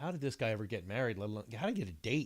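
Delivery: plain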